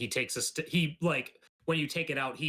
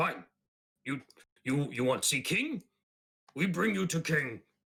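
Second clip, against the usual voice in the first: cross, irritated, angry monster voice; 3 semitones higher than usual. Telling the scene, voicing a character who looks over the group, angry. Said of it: "and he gets like angry".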